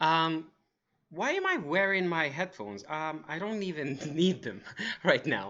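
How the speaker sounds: soft, confused, uncertain puzzled musing. Speaker demonstrates a feeling for the audience: acting confused. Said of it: "that was me being confused".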